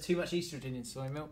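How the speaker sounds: plain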